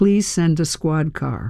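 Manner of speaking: plain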